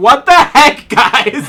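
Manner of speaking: magically resounding voice. A tabletop player casts a spell so their character's voice booms: magically booming voice. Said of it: "cast Thaumaturgy to make my voice boom".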